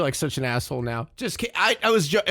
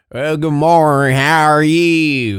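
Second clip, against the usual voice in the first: very loud, slow, thick country drawl; 3 semitones lower, 10 dB louder than usual. Mocking how the people on screen sound: imitating a thick country accent. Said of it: "they sound exactly like".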